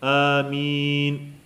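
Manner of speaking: amin with its vowel long and drawn out. Describing how the Sahaba said amin, drawn-out vowel in amin. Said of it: "man drog ut på vokalen också".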